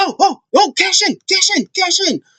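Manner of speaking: high, excited, urging tone. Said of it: "she's like".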